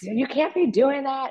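acted indignant scolding yell, very high, slow, drawn-out. Retelling what she yells at delivery riders, retelling an indignant yell. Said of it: "And she gets really indignant".

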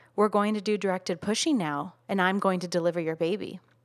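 mildly condescending, talking-down tone. Retelling what a medical worker said during delivery: imitating a condescending tone. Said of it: "a little condescendingly".

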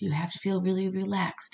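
normal talking voice

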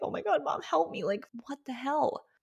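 high-pitched, desperate, tearful sobbing. Retelling crying to her mom after giving birth: imitating past crying plea. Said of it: "I was crying like".

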